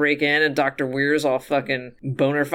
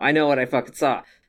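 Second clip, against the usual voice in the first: put-on very serious way of speaking. Retelling a character insisting on what she saw: imitating someone speaking very seriously. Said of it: "all very serious".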